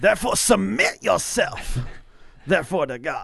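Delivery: loud, high, sermon-style preaching voice. Reading a scripture passage aloud in the morning: preaching voice. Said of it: "Let me get the preaching voice on".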